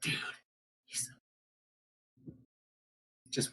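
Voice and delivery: stage whisper. Leaning in toward another player during the game, whispering. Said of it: "what are you whispering?".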